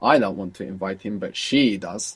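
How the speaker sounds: strong emphasis on she. Showing how English stresses the pronoun with the voice: stress on she. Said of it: "you will stress it with your voice".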